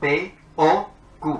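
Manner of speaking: middle O strongly accented. Showing another way to read a logic formula: stress on the middle o. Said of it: "haciendo acento en la O en el centro".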